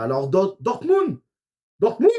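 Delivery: Dortmund said in a sudden put-on German accent. Commentating on a football match, slipping into a sudden German accent. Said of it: "j'ai l'accent allemand d'un coup".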